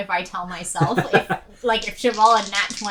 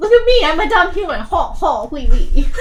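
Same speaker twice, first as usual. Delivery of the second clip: very loud, high, dopey mocking caricature; 7 semitones higher, 9 dB louder than usual. Playing a shapeshifter mocking humans in character: mocking impression of a dumb human. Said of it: "Do my impressions".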